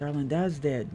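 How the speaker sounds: sad, gentle, soft and sorrowful voice. Voicing a character breaking news to the player: sad character voice. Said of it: "She says that with a lot of sadness".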